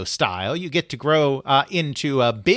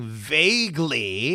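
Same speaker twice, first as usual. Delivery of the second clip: the word vaguely stressed. Asked to describe Kool-Aid Man on the Atari 2600, stressing the word vaguely. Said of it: "emphasis on the word vaguely".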